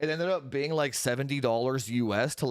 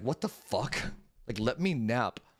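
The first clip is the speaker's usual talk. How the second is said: annoyed, cranky, fed-up put-on cat voice; 2 semitones lower than usual. Voicing the cat after bothering her with a kiss: voicing the cat as mad. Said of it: "She's so mad, dude. She's like".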